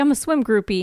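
normal talking voice

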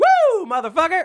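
overjoyed, ecstatic, very high cheering whoop. Performing a line when asked to act an emotion: ecstatic.

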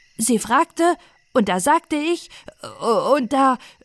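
confused, stuttering. Fritz, asked why he lied to his mother, answers, stammering in confusion. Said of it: "stotterte Fritz verwirrt".

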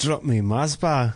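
clumsy, bad, put-on Scottish accent. Joking about Scots deep-frying everything; bad Scottish accent. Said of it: "That was a bad accent".

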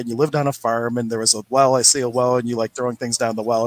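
plain

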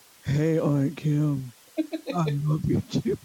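deep, low grown-man voice. Describing her 3-year-old nephew greeting her, imitating nephew Edison's grown-man voice. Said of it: "got a voice like a 19-year-old man".

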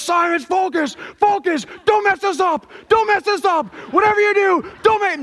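sports coach's yell. Retelling how the coach grabbed his face mask: imitating the coach yelling. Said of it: "he's literally yelling me".

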